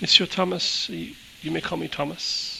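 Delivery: faint, high, creaky, papery rustling rasp. Voicing a four-thousand-year-old being introducing himself: very faint, paper-rustling voice. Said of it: "His voice is like very faint and it sounds kind of like um, paper rustling".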